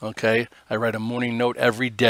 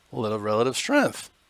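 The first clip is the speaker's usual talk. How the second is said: cracking, breaking voice. Talking through the day's market charts, your voice cracks mid-sentence. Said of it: "My voice just cracked".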